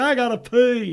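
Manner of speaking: yelling, high and loud. Retelling standing up in a theater row and yelling, Forrest Gump voice. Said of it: "you did the Forrest Gump voice".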